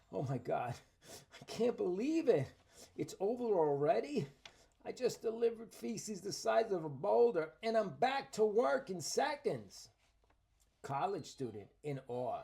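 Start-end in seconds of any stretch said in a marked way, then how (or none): 0.2-9.9 loud, high, winded, panting, breathless gush. Acting out a fake user testimonial: acting an out-of-breath office worker. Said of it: "Office worker out of breath".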